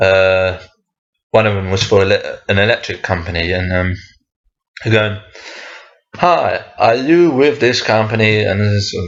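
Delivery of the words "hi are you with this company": clumsy, very bad, put-on American accent. Quoting a salesperson who came around, in a very bad American accent. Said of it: "I don't know why I'm doing an American accent".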